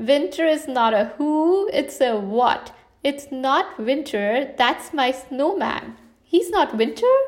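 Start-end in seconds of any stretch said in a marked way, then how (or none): 6.2-7.1 confused, puzzled, wondering, pitched-up tone. The bear replies to the one who just laughed at him, confused. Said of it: "Pooh asked confused".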